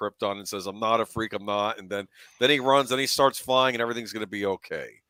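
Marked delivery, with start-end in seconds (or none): none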